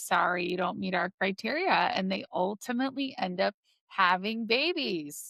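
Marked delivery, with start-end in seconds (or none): none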